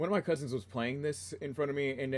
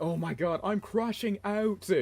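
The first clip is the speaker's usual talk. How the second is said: put-on broad Australian accent, pitched up; 7 semitones higher than usual. Telling how awkward a YouTuber's words were to hear, imitate Drama Queen's extremely Australian voice. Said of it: "the most Australian voice ever".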